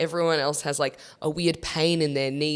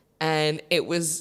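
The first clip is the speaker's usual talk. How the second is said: plain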